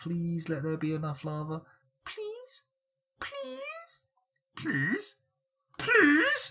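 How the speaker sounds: high creature voice, pitch way up and swooping around. Commentating on a game while watching lava spread, in a Skeksis voice. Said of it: "I'm doing my uh, Skeksis voice there".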